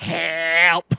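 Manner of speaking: drawn-out cry like a cat stuck up high. Retelling how the cat got stuck up in the closet rafters: stuck cat voice. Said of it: "and that's the cat voice".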